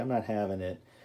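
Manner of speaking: ordinary talk, nothing marked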